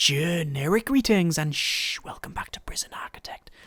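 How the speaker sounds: very quiet, hushed voice. Opening a prison architect video at night time, speaking very quietly. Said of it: "The reason I'm speaking very quietly".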